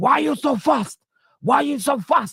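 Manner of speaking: play-acted, very high-pitched, shrill yelling. Retelling a viral video where a man hit by a bike shouts, imitating a man shouting. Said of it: "And the guy's shouting".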